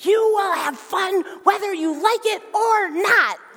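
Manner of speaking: forced, clenched-teeth speech. Speaker retells a mom bending down to her crying child, imitating speaking through gritted teeth. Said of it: "through like super gritted teeth".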